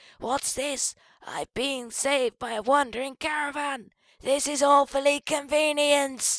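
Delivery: wounded, bleeding-out voice. Playing a shot character saved by a wandering caravan: getting-shot voice, bleeding out. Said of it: "my getting shot voice and bleeding out".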